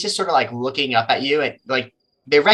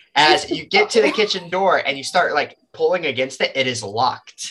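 plain

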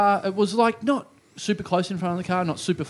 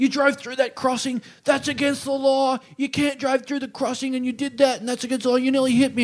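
worked-up, high-pitched yelling that keeps going; 6 semitones higher than usual. Retelling how an American man yelled at him, retelling a yell. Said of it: "so he's yelling at me".

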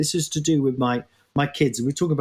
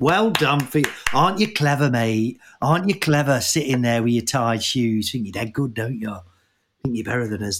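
put-on Nottingham accent. Teasing the other speaker about tying shoes: Nottingham voice of childhood peers. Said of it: "that voice I just did there is".

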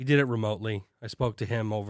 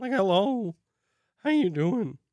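very high voice, breaking and cracking; 10 semitones higher, 4 dB louder than usual. A podcaster greets listeners while their voice keeps cracking, voice cracking. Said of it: "My voice keeps cracking".

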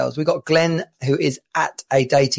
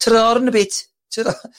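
tentative, slow, high-pitched put-on Birmingham accent; 9 semitones higher, 4 dB louder than usual. After talking about someone's accent, the speaker tries a bit: attempted Brummie accent. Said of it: "I can attempt a bit of a Brummie".

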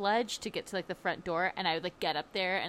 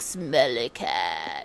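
put-on stuffy sick voice, lower and louder; 7 semitones lower, 5 dB louder than usual. Teasing a sick friend by imitating a stuffy sick voice: sick Phoebe from Friends voice. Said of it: "you're like Phoebe from Friends right now when she gets sick".

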